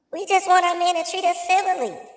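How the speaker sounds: very high-pitched woman's voice. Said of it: "I gotta use her voice".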